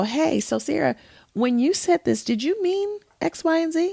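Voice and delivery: curious, inquisitive, non-accusing tone with rising pitch. Showing how to check a misunderstanding with a question: curious tone. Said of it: "I'm coming to you in a curious tone".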